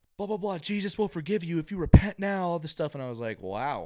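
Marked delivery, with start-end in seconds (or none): 0.2-3.0 very loud, high-pitched hectoring yell. Speaker retelling a man who shouted at them, imitating a man shouting. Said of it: "he was shouting at me".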